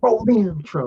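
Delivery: snide, sarcastic, high-pitched delivery. Imitating the other speaker starting the show: sarcastic impression of the other speaker. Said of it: "that was my impression of you doing it".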